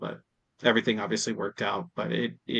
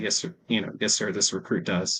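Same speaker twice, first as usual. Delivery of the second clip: usual speaking voice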